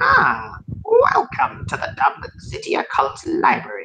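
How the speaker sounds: very high, slow, scratchy voice, like glass on glass. Voicing a tiny glass golem greeting visitors: scratching glass golem voice. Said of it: "in a very kind of scratching voice".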